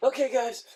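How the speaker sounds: high-pitched, loud, shaken, rattled host voice. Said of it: "him going".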